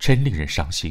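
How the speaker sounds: plain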